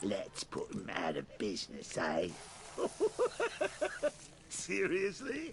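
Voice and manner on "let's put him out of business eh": low, gruff mock hero voice. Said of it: "Do you believe that accent?".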